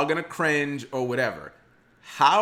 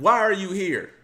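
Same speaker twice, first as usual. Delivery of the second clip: put-on yelling, barked high; 6 semitones higher than usual. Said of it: "when the guy's yelling".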